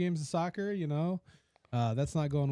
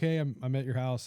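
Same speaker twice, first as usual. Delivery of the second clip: ordinary delivery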